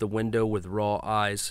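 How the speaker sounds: plain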